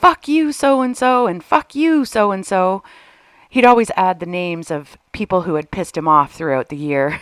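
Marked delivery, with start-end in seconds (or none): 0.0-2.8 furious scream at the top of the lungs, higher. Retelling how the dad screamed out the front door at midnight: imitating Bob McNall screaming. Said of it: "scream at the top of his lungs".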